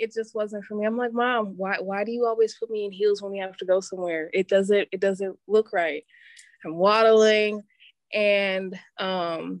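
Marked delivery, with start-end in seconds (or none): none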